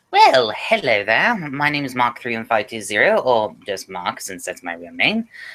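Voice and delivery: put-on British accent. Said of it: "I'll just get out of my British accent now".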